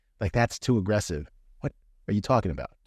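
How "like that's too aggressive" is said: plain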